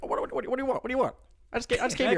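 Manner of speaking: rattled off fast, pitched way up. Imagining two short men going at it: Martin Scorsese impression. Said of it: "Scorsese's like".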